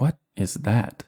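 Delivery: slow, trailing, uneasy tone in a changed voice. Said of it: "and he's like".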